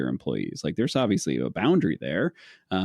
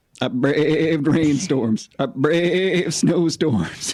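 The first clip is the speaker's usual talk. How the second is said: put-on goat voice, much higher; 7 semitones higher, 5 dB louder than usual. Asked by friends to do his goat voice, he performs his one line in goat voice. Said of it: "I do a goat voice".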